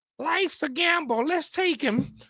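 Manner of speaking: very high, formal, proclaiming delivery. Retelling how he joined the team, the speaker quotes Mr. Wilson's owner voice. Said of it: "in his owner voice".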